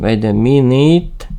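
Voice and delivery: plain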